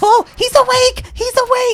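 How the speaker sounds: imitated high-pitched doll voice. Retelling meeting a porcelain doll come to life, in its high-pitched doll voice. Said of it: "had a real high pitched voice".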